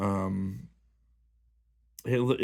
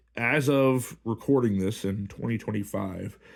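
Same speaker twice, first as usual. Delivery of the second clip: normal talking voice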